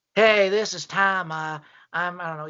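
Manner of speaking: mock miserable old man voice, put-on. Retelling a man who phoned in while the speaker listened, imitating a miserable old man. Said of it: "He sounded old. He sounded miserable".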